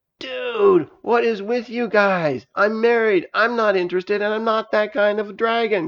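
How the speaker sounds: high, alarmed outcry. Juice, a married dragon, protests to the others, crying out in alarm. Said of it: "cried Juice in alarm".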